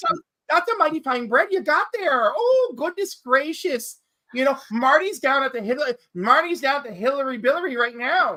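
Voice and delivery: backwoods Canadian accent. Speaker jokes around in a really hick Canadian accent. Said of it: "the really hick Canadian accent".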